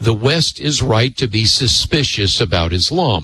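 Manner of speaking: normal talking voice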